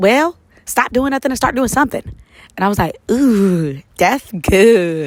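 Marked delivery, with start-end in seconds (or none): 0.0-2.0 rapid-fire, really fast, high-pitched delivery. Quoting her best friend's advice from a podcast chat, saying it really fast. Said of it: "she kind of said it really, really fast".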